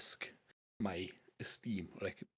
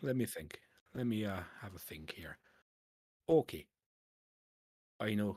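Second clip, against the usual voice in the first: put-on Irish-accented voice. Acting out a scene as a business partner: Irish accent. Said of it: "I've gone Irish now".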